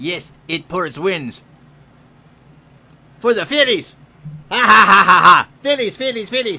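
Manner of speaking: very loud, bellowing put-on character voice. Cheering for the Phillies as a Triumph the Insult Dog impression. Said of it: "to do my impression of Triumph the Insult Dog".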